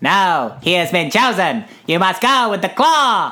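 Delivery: put-on little green man alien voice. Retelling a claw-machine scene, the speaker voices the alien men: little green alien voice. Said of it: "How's my little green man impression?".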